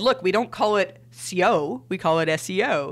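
ordinary talk

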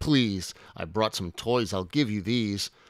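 plain reading voice

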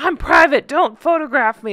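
put-on aggrieved, hard-done-by voice. Mocking a public figure's complaints about photographers: Meghan voice. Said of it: "That's my Meghan voice".

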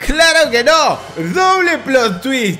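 loud, high, slow, exaggerated surprised delivery.

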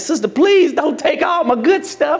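high-pitched put-on pleading, begging voice.

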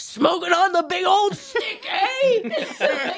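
very high, slow, drawn-out, rising over-excited gushing tease. Acting out a line the speaker imagined saying to him, mock-excited. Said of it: "like getting really excited".

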